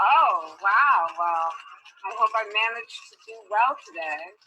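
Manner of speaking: plainly dry, sarcastic delivery. Replying to praise and an offer of a harder hike: sarcastic tone. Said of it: "it very clearly sounds sarcastic".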